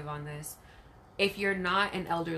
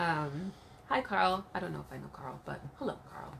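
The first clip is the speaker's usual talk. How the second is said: normal talking voice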